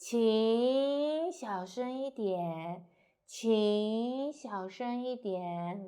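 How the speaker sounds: 请 starts low and rises, 小声一点 falls. Demonstrating the tones of a chinese phrase to learners, start high, go up, go down. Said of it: "start high and go up, go down".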